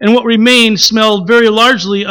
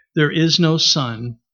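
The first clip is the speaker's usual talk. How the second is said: solemn, grave, hushed and unhurried; 6 semitones lower, 8 dB quieter than usual. The witch repeats her words to Jill and the others: slowly and gravely. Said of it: "Slowly and gravely, the witch repeated".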